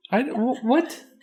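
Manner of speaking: high, loud, flustered stammering confusion.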